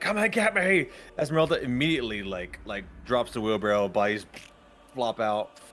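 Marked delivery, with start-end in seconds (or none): 0.0-0.9 very high, shrill, shrieking scream. Narrating Zash running through the field: screaming. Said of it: "screaming like".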